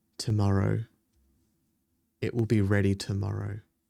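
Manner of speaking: whispering. Voicing a character leaning in to someone's ear: whispering in character. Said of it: "and whispers in your ear".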